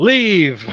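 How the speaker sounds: very loud, furious, raging shout. Voicing a character casting command, pointing his finger: angry command. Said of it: "very angry right now, and he's just pointing his finger".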